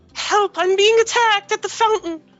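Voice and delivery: distressed damsel in distress voice. Sending a message as a character, calling for help: damsel in distress voice. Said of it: "in my most damsel distressed voice".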